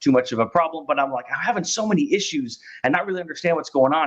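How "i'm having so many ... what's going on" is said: rushed, rapid, pitched-up rambling. Retelling own words to a provider: retelling own fast talking. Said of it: "I'm talking about this fast".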